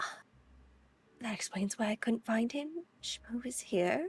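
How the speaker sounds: high, hushed, passing whispered aside. Voicing a character slipping past, whispering to two at a table: whispering. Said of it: "kinda whispers to".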